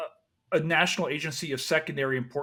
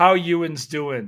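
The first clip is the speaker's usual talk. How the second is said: fake Yinzer Pittsburgh accent, louder; 2 semitones higher, 9 dB louder than usual. Trying out a practiced accent to greet the final contestant: put-on Pittsburgh accent. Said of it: "Did I do it right?".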